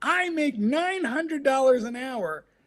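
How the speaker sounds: put-on very high, shrill, enraged screaming. Retelling what a caller screamed at the speaker over the phone: retelling a scream. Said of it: "what he was screaming was".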